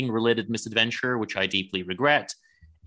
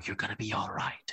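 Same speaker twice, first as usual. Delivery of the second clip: hushed, breathy, dramatic theatrical whisper; 9 dB quieter than usual. Retelling a scene where Garth comforts Linda: imitating Garth's dramatic whisper. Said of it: "he whispers".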